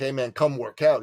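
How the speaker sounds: usual speaking voice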